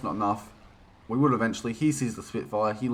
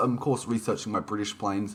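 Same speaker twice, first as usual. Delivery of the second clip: usual speaking voice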